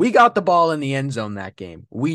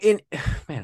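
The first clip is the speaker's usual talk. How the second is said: voice cracking; 4 dB quieter than usual. Talking about football, the speaker's voice breaks mid-sentence: voice cracking. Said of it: "another voice crack".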